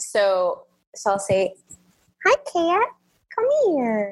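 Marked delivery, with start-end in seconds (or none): 2.2-4.1 pet-talk voice, pitched much higher. Asked for an example, showing the voice for talking to a cat. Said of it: "can you give us an example of the cat voice?".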